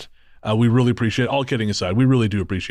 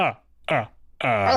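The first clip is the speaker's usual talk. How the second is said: laugh in a vampire count voice. Reading out a comment from a listener named Count, as a vampire count laugh. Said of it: "This comes from Count, and Count says".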